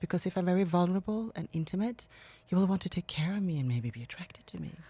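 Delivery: put-on airy, girlish delivery. Demonstrating how a woman practiced speaking to her viewers, breathy girlish voice. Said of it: "she would speak more like this and a little bit girlish".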